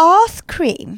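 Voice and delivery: plummy put-on posh English accent, high and loud. Testing how a phrase sounds when said in a posh english accent. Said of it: "in a posh English accent".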